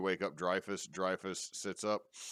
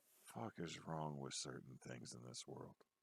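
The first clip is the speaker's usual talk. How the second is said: whispered character voice, much quieter and lower; 5 semitones lower, 13 dB quieter than usual. Narrating a scene, voicing a confused Arvax as he closes the flap, whispering. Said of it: "you're gonna hear him whisper".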